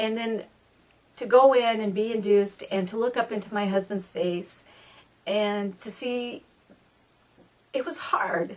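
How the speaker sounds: heavy with emotion, welling up. Telling of her stillborn son, the mother recalls her husband's face: getting emotional. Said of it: "can't believe I'm getting emotional now".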